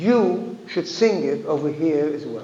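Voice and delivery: normal talking voice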